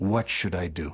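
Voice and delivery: low, tired, worn-out, weary voice. Recounting a president's question after half an hour of shouting, retelling a weary question. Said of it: "he said to me in a weary tone of voice".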